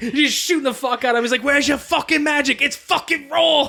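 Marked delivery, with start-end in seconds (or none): 1.4-3.7 pitched-up, full-on berating, tearing in. Retelling a movie character shooting a man in an asylum: Gordon Ramsay impression. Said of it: "full on, like, Gordon Ramsay on his ass".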